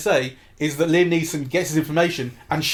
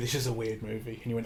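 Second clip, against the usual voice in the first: hushed, very quiet half-whisper; 5 semitones lower, 12 dB quieter than usual. Retelling what was said during the film: imitating own half-whisper. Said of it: "I whispered to you".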